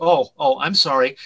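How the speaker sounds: normal talking voice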